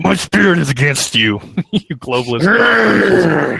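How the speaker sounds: close-mic growled voice. Show your favorite moment, when the host gets all up in the mic, imitating his growl. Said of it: "he like growls like".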